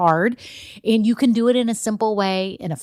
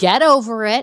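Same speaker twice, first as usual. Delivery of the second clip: slightly raised, a little louder voice; 5 dB louder than usual. Telling the audience to get over themselves, in a slightly raised voice. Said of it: "do y'all like how I'm kind of raising my voice a little bit?".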